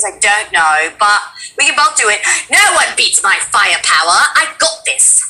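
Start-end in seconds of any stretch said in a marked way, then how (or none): 2.5-5.2 put-on British accent. Taking another go at a line, in a british accent. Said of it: "I got this in a British accent".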